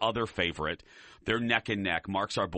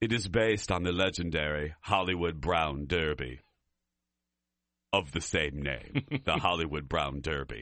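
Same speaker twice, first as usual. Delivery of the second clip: fancy, highfalutin put-on voice, much lower pitch; 5 semitones lower than usual. Introducing the fancy hollywood brown derby restaurant, in a highfalutin voice. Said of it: "I'm saying it like this".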